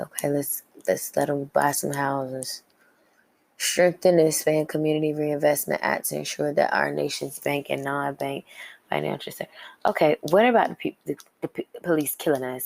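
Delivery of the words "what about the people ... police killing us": stuttering, tripping over words. Reading a policy list aloud and reacting to it, stuttering. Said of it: "I'm stuttering".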